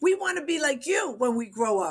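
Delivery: put-on high, light squeal. Retelling what a group screamed about wanting to be like the speaker: imitating someone screaming. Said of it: "was screaming".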